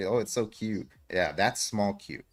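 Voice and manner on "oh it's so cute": mock gushing over cuteness, higher. Describing women seeing a tiny version of a product: imitating women gushing over something cute. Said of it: "be like".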